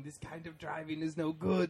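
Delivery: furious anger boiling over into a screaming yell. Retelling how a man hit by a car screamed on camera, retelling an angry scream. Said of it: "and he's screaming".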